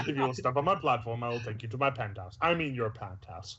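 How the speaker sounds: mock delivery, rattled off very fast and rushed.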